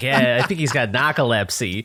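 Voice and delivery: put-on Boston accent laid on thick. Retelling a mother saying a word on the phone: heavy Boston accent. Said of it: "she hit it so hard with the Boston accent".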